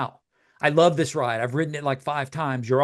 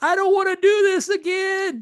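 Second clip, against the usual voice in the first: acted, very high, long-stretched holler. Retelling a roller coaster ride, the grandson's line: imitating grandson yelling. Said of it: "my grandson just yells".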